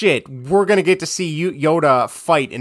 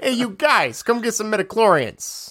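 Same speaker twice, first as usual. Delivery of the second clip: fake New York accent, higher; 4 semitones higher than usual. Joking about midichlorians after the Liam Neeson bit: put-on New York accent. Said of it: "This is like New York accent again".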